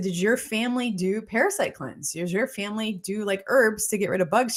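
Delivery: ordinary delivery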